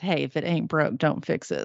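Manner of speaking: hushed muttered aside under the breath. Retelling what a mom said about rice cereal: imitating muttering under her breath. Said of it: "And then under her breath".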